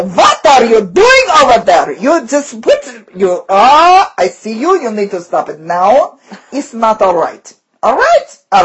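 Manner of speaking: put-on, frustrated, angry, swooping Russian accent. Showing how they vent frustration without cussing, in an angry russian accent. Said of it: "an accent that works really well for me when I'm really frustrated is a Russian accent".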